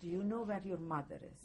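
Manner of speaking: ordinary talk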